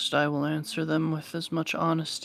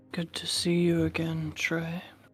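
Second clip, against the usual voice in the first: hushed whisper. Greeting a returning player in character: whispering. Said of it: "why'd you whisper my name like that?".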